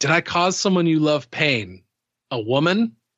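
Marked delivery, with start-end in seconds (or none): none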